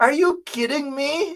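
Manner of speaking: high-pitched delivery spoken through a dog laugh. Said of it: "he says it in a dog laugh".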